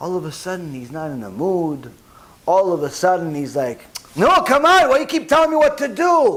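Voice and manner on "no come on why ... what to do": put-on, high-pitched acted yelling. Acting out a husband refusing his wife's invitation: acted yelling. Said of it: "Why are you yelling at me?".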